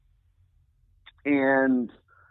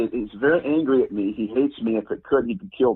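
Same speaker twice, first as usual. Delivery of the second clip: ordinary delivery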